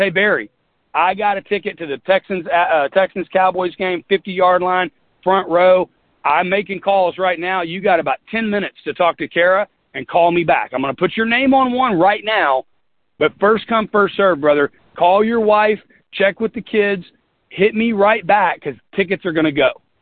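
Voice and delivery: blunt, direct, pushy, straight-to-it, no-pussyfooting talk. Imagining how the listeners would call a friend about tickets, imitating blunt, direct talk. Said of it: "you guys would not pussyfoot around".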